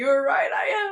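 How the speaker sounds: mock crying wail, high and loud.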